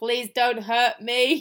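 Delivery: mechanical, flat, monotone robot voice. Retelling what a woman in the story said while staying still, in a robotic voice. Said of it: "tries to say in a robotic voice".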